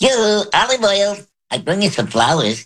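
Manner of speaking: squeaked out way up high. Showing a voice learned from throat singers: Popeye voice. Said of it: "it sounds like Popeyes".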